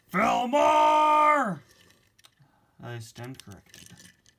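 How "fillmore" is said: very high, stretched-out, furious angry bellow. Calling out a neighbor's name from a distance: angry yell. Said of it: "No need to yell like that".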